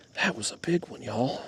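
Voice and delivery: sudden, hushed, breathy whisper. Fishing for big carp and talking to viewers, suddenly whispering. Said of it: "I don't know why I'm whispering all of a sudden".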